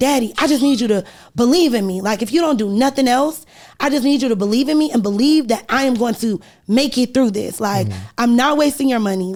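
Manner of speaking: tearful, crying, begging tone. Retelling a call asking a father for money: retelling a tearful plea. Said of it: "I'm crying in the middle of the aisle".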